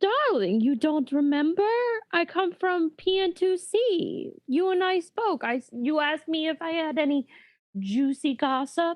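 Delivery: completely affronted. Voicing Mara, who is not recognized by the editor: completely affronted. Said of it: "Mara looks completely affronted".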